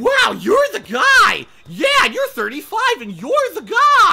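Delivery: giddy, very high, very loud excited gush. Mocking a guy who was excited to be on a stream: imitating an excited guy. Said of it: "so excited that he gets to do this on a stream".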